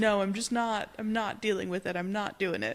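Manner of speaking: ordinary talk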